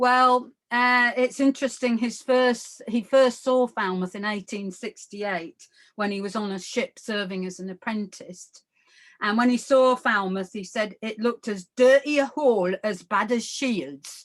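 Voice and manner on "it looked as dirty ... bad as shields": best-attempt Newcastle Geordie accent. Quoting a ship's apprentice on first seeing Falmouth: Newcastle accent. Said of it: "That's my best Newcastle accent".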